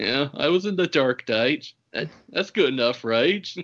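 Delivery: put-on uninterested voice. Mocking how the cat's voice actor recorded his lines, mock-disinterested Eric Roberts impression. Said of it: "sounding so disinterested".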